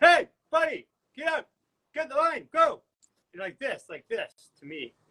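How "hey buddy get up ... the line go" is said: very high, loud yelling. Retelling an airport customs line story: imitating a man yelling. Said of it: "he's yelling".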